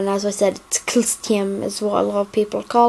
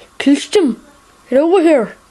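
loud, high-pitched, failed put-on Scottish accent; 6 semitones higher, 5 dB louder than usual. Joking about how people mispronounce his name, in an attempted scottish accent. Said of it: "sound kind of Scottish".

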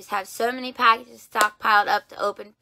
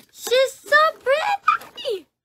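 voice breaking and squeaking very high. Unboxing a collectible pop figure and admiring it, voice cracking. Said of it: "My voice is cracking".

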